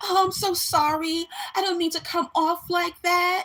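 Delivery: put-on very high, fake victim tone, mock sorry. Retelling how a manager apologized to her followers, imitating someone playing the victim. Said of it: "victimization bullshit".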